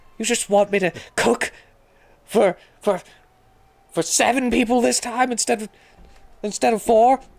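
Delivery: very high, forceful yell-whisper, barely contained. Retelling a woman scolding a man in another room, the speaker does her yell whisper. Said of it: "basically a yell whisper".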